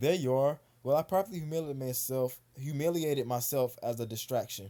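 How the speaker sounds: ordinary talk, nothing marked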